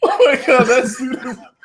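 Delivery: very high voice, giggling and laughing mid-sentence. Reacting to another speaker wearing glasses under a shark costume: laughing while talking. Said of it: "I don't know why I'm laughing".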